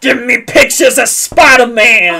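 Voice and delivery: very loud, full-volume bellowing rant. Speaker quotes a Spider-Man movie line to the others, in Cave Johnson's voice. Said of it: "in Cave Johnson's voice".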